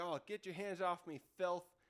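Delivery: ordinary talk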